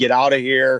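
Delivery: plain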